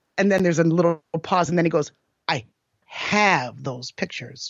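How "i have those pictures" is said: very low, slow, conniving, sneering monotone. Retelling what a man said, the speaker imitates his monotone, sneery, conniving voice. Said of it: "monotone, sneery, conniving voice".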